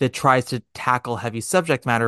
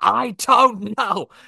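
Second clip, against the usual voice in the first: mock, high, pitched-up shouting; 9 semitones higher than usual. Recounting a scene where Philip reacts to Alana; imitating Philip shouting. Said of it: "he shouts".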